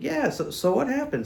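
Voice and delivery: high-pitched, curious tone.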